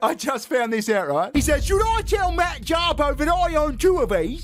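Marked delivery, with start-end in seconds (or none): 1.7-4.4 imitated British accent. Retelling what a British man said about his Lego sets; put-on British accent. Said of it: "I love that he does the accent".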